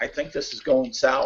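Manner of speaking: muttered under the breath, barely voiced hushed whisper. Game master voices a character speaking aside to a friend: whispering under his breath. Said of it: "he'll kind of whisper under his voice".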